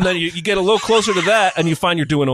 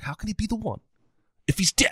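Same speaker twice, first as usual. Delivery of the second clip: breathy, hushed, with marked rising inflection; 4 semitones higher, 7 dB quieter than usual. Quoting a movie character's line to fellow guests: Cypher impression. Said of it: "I always like to quote, uh, Cypher".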